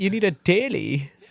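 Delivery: clumsy put-on German accent. Acting out an Instagram car ad line: imitating a German accent. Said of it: "what I would think a guy named Hans would talk like".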